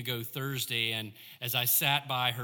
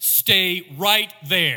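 very quick, urgent, clipped, much louder; 6 semitones higher, 10 dB louder than usual. A woman on the phone gives the caller instructions, very quick and urgent. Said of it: "very quick and very concise and very urgent".

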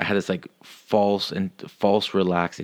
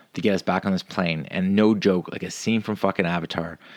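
ordinary delivery

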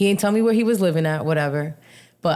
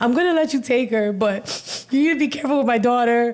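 high, tearful, very emotional mock crying; 6 semitones higher than usual. Speaker retells her phone call about her daughter's weekend, retelling crying on the phone. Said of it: "I'm fucking crying on the phone".

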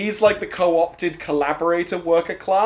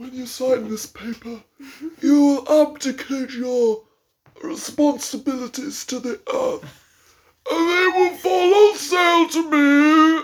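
put-on whispering villain voice, higher pitch; 9 semitones higher than usual. Quoting a movie scene of whispering over an iPad: imitating Eddie Redmayne whispering. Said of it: "whispering over an iPad".

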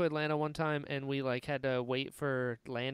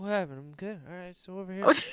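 put-on tipsy woman voice, surprised and oblivious; 4 semitones higher, 4 dB louder than usual. Retelling what a woman who fell over said: imitating a drunk woman. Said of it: "she was so drunk".

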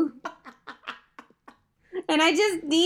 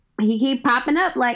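plain

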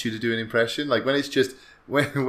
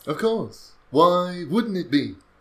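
halting dramatic put-on voice, higher; 7 semitones higher than usual. Talking on National Talk Like William Shatner Day: William Shatner voice. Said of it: "Are you gonna do the whole podcast like this?".

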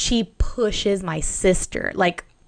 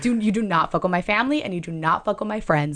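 acted fierce, aggressive anger. Retelling a confrontation with a woman, acting out an aggressive outburst. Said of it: "like that's how fucking aggressive I was".

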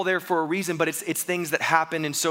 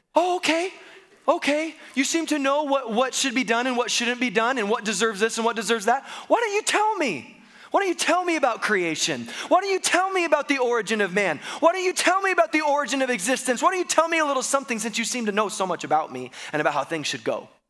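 mock funny, heavily sarcastic, high and swooping; 7 semitones higher than usual. Retelling God's reply to someone who claims to know better: sarcastic God voice. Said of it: "I love that God is sarcastic here".

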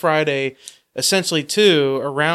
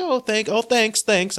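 bad, botched, pitched-up Canadian accent; 7 semitones higher than usual. Acting out Canadian employees handing out flyers, bad Canadian accent. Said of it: "I can't do a Canadian accent".

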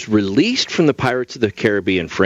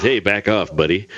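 plain

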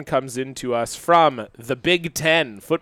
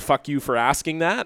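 mock snarky short reply, quieter; 4 dB quieter than usual. Acting out a player annoyed by a reporter's question: imitating a snarky short answer. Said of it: "give this kinda short little snarky answer like".

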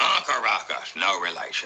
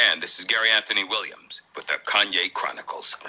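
plain

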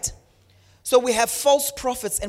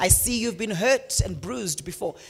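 ordinary talk, nothing marked

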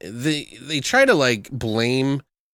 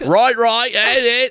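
bad, terrible put-on Australian accent, very high; 11 semitones higher, 5 dB louder than usual. Retelling a movie friend's words in a terrible australian accent. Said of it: "I'm doing terrible Australian accent".

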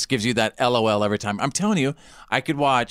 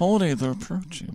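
put-on nerdy character voice, higher and quieter; 4 semitones higher, 4 dB quieter than usual. Repeating a line after being asked to move the jaw: Kip voice. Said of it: "You sound kinda like Kip".

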